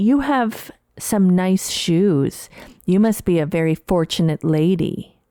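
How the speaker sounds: lightly scolding, reproachful, faintly rebuking tone, acted. Retelling an uncomfortable remark from an earlier encounter: imitating a rebuking tone. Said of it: "in a tone that bordered on rebuking".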